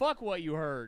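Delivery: put-on weak, wimpy tough-talking voice. Retelling answering mom with a borrowed line: imitating own weak tough talk. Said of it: "sounds like a pussy talking shit that's about to get spanked".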